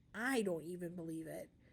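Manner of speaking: ordinary delivery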